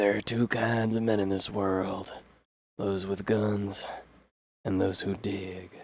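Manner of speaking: put-on gravelly cowboy voice. Comparing a game character's voice, imitating Clint Eastwood. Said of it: "'cause Clinton is like".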